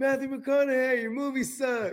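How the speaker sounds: fake loud, high-pitched yelling. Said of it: "Matt McConaughey was yelling at the building".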